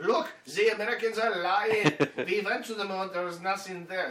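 very loud, high-pitched put-on German accent. Imagining how Germans would react to Americans lying about the moon, German accent. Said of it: "That is a German accent".

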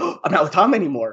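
mock thrilled, excited, bursting with eagerness. Retelling a cartoon scene after a breakup, imitating Star, excited. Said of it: "she's so excited".

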